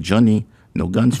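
put-on English spoken with a Greek accent. Speaker quoting Mama in her Greek accent. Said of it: "she had that Greek accent".

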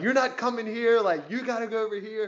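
mock high yell. Retelling how a security guard yelled at the speaker in line, retelling a yell. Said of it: "he's just like yelling at me".

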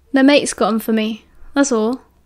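usual speaking voice

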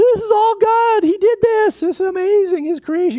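high, loud, projected yell. Retelling how they yelled at their friend Rob, retelling a yell. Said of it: "I'm yelling at Rob".

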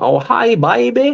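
put-on very high, loud, classic Alabama Southern accent. Describing a very southern woman from alabama, imitating a classic southern accent. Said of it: "how southern like them classical southern people be".

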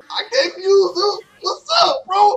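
high, loud, crying shout.

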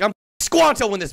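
mocking, imitated angry, mad-sounding voice. Retelling the online creator's angry reply: imitating Dream being mad. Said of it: "he was mad".

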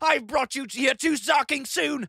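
loud, bellowing roar full of hatred. A character turns on the man he means to kill, roaring. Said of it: "he roared".

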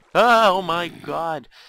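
loud, slow, startled, frightened yell.

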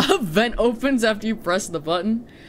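giggling through the words. Streamer responding to another player's suggestion, laughing. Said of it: "I'm laughing".

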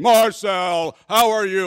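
loud, slow, drawn-out booming voice. Retelling a scene in a church entrance, imitating the loud deacon as he greets a man, booming loudly. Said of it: "I'm even breaking the microphone right now".

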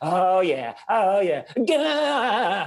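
very slow, high, drawn-out climax moans. Retelling recording voiceover efforts, imitating climaxing noises. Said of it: "I'm still standing here going like".

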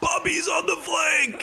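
mock screaming. Asking teammates if they heard a player, retelling a scream. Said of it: "He's just screaming".

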